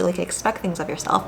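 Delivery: talking very quickly, rushed.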